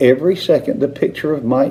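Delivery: plain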